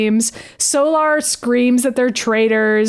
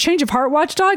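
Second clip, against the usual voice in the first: ordinary talk, nothing marked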